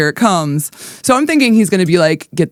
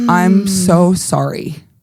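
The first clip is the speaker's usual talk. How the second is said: put-on loud bawling and sobbing. Retelling how the husband apologized while bawling: imitating husband bawling. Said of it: "He sat there bawling".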